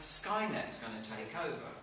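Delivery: normal talking voice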